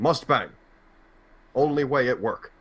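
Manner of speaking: dim, dumb-sounding caveman voice. Joking about early-2000s stories as a new improv character: caveman voice. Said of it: "I don't like the voice you used for that".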